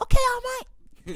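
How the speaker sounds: very high-pitched anime voice. Imitating a character answering a command from All Might: imitating Deku's voice. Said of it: "In that exact voice".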